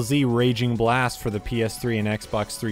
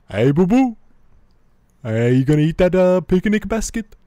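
goofy cartoon bear voice, higher, louder; 8 semitones higher, 6 dB louder than usual. Friends talking about old cartoons, one quoting a cartoon bear, Yogi Bear voice. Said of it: "That's fucking Yogi Bear".

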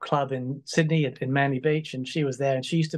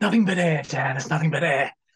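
airy, light put-on voice; 3 dB louder than usual. Describing a backing vocalist's voice, the speaker quotes his saying: airy Dave impression. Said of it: "he's got this really airy".

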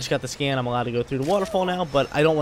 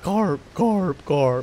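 tiny cartoon fish creature voice; 3 semitones higher, 3 dB louder than usual. Spotting a carp, doing a favorite Pokemon carp impression for the audience. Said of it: "I love doing that impression".

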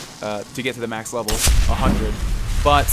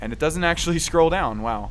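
ordinary delivery

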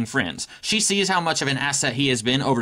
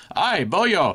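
put-on speaking in Irish accent; 4 semitones higher than usual. Pitching a scene where a teacher greets a student, Banshee's Irish accent. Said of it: "Do you guys like my Irish accent?".

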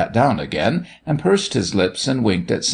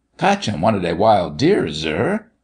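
ordinary delivery

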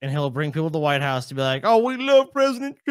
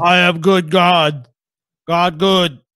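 talking like a caveman; 3 semitones higher, 8 dB louder than usual. Retelling what he said about God and church, caveman voice. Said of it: "why was he talking like a caveman?".

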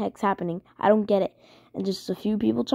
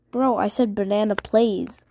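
plain

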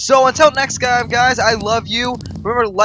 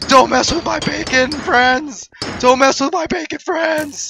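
shouting until voice gives out; 4 semitones higher than usual. Yelling in a game to protect a piggy friend: shouting until voice gives out. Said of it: "I think I just lost my voice".

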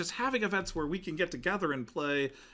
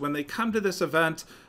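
ordinary talk

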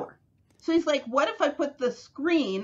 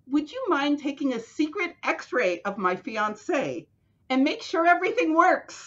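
ordinary talk, nothing marked

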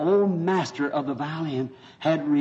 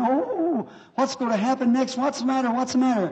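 put-on high, frantic, panicked little girl's scream; 9 semitones higher than usual. Retelling a story of a girl in the dark: imitating a girl screaming in panic. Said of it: "She's screaming, jumping up and down".

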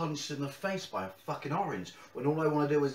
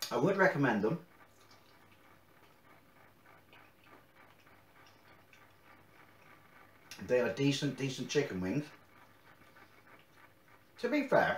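speaking with a full mouth while chewing. Reviewing hot chicken wings, talking with mouth full, chewing. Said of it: "talking my mouthful".

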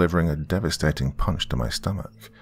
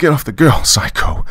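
trembling, high, very loud yell of fear and rage; 8 semitones higher, 8 dB louder than usual. Narrator jams a revolver into an old man's neck and demands, voice shaking with fear and rage. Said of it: "my voice shaking with fear and rage".

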